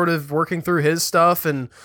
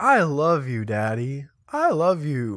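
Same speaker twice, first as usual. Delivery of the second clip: mock affectionate childlike voice; 3 semitones lower than usual. Imitating a four-year-old being lovey-dovey: imitating AJ being lovey-dovey. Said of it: "A J gets all lovey-dovey".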